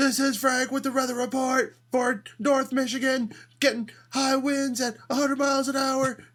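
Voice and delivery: very high radio announcer voice. Reminding the others how Frank did the weather report: imitating Frank. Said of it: "You remember Frank's like".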